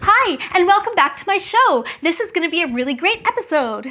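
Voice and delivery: cheerful, lively, high, quick, bubbly talk-show host voice. Demonstrating how a TV talk show host sounds; bubbly talk show host voice. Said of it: "bubbly sounding voice".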